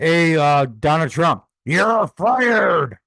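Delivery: bellowed loudly at full volume. Answering a request to say the line like Vince McMahon: Vince McMahon impression. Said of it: "Say it like Vince McMahon".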